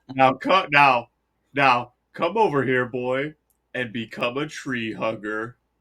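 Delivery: deep, dropped, silly tree-giant voice. Continuing a skit as Treebeard calling a boy over: Treebeard voice. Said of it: "the fucking stupid ass tree beard part".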